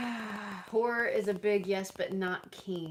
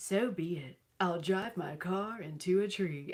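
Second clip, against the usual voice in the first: read-aloud audiobook narrator's reading voice. Recalling an audiobook, the speaker imitates the narrator reading a line. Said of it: "It was so like this".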